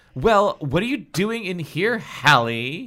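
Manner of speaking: quavering, insistent. Brenda finds Hallie in her room and demands, voice trembling. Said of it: "Brenda demanded. Her voice trembled".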